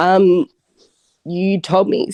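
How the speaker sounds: very slow, a bit emotional voice. Recalling what was discussed in a past session, the speaker is a bit emotional. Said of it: "Sorry, I'm just a bit emotional".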